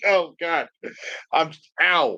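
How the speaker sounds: very slow, swallowing a laugh. Reacting with a pained "ow", trying not to laugh. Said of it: "I'm trying not to laugh".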